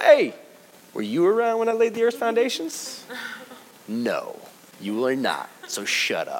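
put-on sarcastic, swooping voice. Acting out God answering Job: mock sarcastic God voice. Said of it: "we get sarcastic God".

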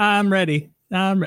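cartoon character voice, stretched and drawn out. Imitating how SpongeBob says a catchphrase: SpongeBob voice. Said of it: "SpongeBob would go".

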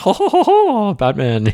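very high, swooping, slow, drawn-out evil laugh. Speaker compares their mood swings to a Batman villain, imitating the Joker laughing. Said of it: "the Joker's like laughing like".

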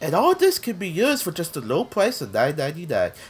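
sing-song TV shopping pitchman announcer voice. Showing the kind of voice the speaker pictured: infomercial announcer voice. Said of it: "That kind of voice".

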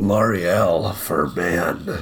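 gravelly, authoritative, commanding voice-over delivery. Trying out a gravelly authoritative voice: Liam Neeson voice. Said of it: "that was a little bit more Liam Neeson".

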